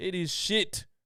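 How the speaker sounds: put-on New Zealand accent. Thanking a caller from new zealand, imitating caller's new zealand accent. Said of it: "I'm sorry for impersonating your accent".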